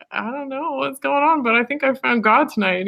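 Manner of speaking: meek, embarrassed tone. Retelling a phone call to dad after finding God: imitating a sheepish voice. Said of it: "I told him in a really sheepish voice".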